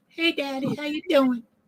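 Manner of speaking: very high put-on house cat voice. Asked what the pets' voices are, the speaker does the pet cat voice. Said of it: "my cat sounds like this".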